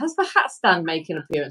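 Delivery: plain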